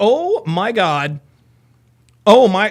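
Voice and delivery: very slow, utterly shocked, stunned disbelief. Commentator voices the woman's reaction as the man answers her, imitating a shocked woman. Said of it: "She is utterly shocked".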